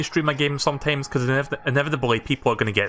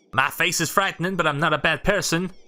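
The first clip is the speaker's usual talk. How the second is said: put-on New York accent; 3 semitones higher than usual. Reading the gravekeeper's game dialogue aloud, in a New York-accented Dampé voice. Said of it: "Why'd I keep giving people New York accents?".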